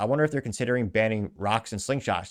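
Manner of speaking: ordinary talk, nothing marked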